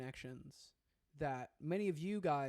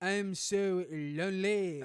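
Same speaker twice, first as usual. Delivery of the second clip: loud, fake French accent, laid on thick; 4 semitones higher, 8 dB louder than usual. Joking to the ladies who like french: put-on french accent. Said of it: "here's some French for you".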